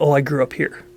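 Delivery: ordinary talk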